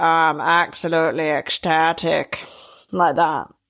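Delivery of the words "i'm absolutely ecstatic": gloomy, down-in-the-dumps northern English accent. Demonstrating how people up north talk, in a glum northern accent. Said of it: "up north, they're all a bit depressed".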